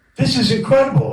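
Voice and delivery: amazed exclamation, high and loud.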